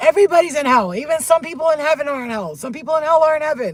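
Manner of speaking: shrill scream, very high and very loud. Speaker retelling arguing with a man about hell, retelling a scream. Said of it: "And I screamed it out".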